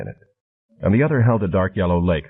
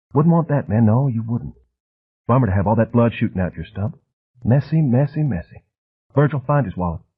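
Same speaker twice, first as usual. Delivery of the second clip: put-on soft, almost feminine, refined Southern accent, jabbering, higher; 3 semitones higher than usual. Reading a novel aloud, voicing the man holding a razor: soft, almost feminine voice with refined Southern accent. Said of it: "He had a soft, almost feminine voice".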